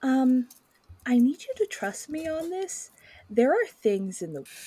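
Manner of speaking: hushed, secretive half-whisper. Voicing a character who checks no one is close, then half-whispers: half-whispering in character. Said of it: "she's just gonna whisper".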